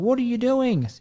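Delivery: very high, shrill, startled yell. Retelling someone yelling at them while they dial triple O, imitating the yell. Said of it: "someone yelling at me".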